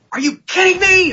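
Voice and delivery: very high, shrill, shocked, outraged scream. Retelling standing up during a script reading: retelling a scream. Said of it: "I stood up and I screamed".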